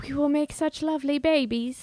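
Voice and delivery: bad fake British English accent. Retelling what a character writes in her diary, in a bad British accent. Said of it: "That was really bad".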